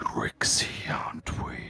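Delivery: quiet, deep creature voice. Game master voicing a winged creature addressing a player's character, creature voice. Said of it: "and it says".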